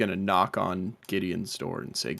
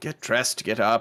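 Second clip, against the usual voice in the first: sighing with disappointment; 2 semitones higher than usual. Voicing a character waking a lazy companion: sighing disappointedly. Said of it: "He just kind of sighs disappointedly".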